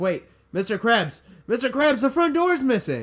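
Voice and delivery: put-on frantic cartoon panic, very high, swooping, rising. Retelling a cartoon scene, imitating SpongeBob freaking out. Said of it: "freaking out".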